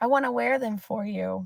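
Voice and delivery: breezy, light and playful, easygoing tone. Demonstrating how to ask someone to buy shoes; light and playful. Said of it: "my energy is very light and playful".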